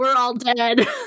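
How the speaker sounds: acted, high-pitched, frantic, panicked outburst. Recalling an earthquake, the speaker acts out the group's reaction, retelling freaking out. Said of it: "I was like freaking out".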